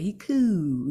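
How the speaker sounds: "he cool" said with bottom jaw jutted out. Showing how to say a line: extended bottom jaw. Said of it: "you gotta extend your bottom jaw when you say".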